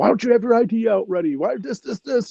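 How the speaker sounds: high-pitched screaming. A speaker recalls being the VIP door guy after ten Red Bulls, retelling own screaming. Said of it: "and I'm screaming".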